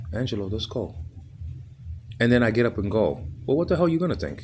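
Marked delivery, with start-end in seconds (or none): 0.1-0.9 seductive, coaxing, sensual, wooing voice. Retelling what a woman said to the speaker, imitating a sensual wooing voice. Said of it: "in a sort of sensual voice".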